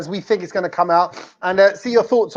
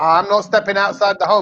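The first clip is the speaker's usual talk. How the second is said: ordinary talk, nothing marked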